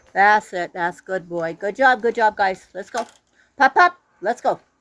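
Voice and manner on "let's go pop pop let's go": authoritative, no-nonsense, commanding tone. Calling out to the group to get moving, in a commanding tone. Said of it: "a commanding tone to my voice".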